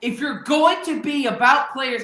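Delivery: angry yelling. Making a point about teams and players: angry yelling. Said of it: "I'm yelling because I'm so mad".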